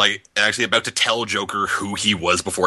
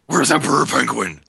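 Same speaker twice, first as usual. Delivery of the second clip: gruff, rough, creaky rasping growl; 5 semitones higher than usual. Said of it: "why are you talking like that?".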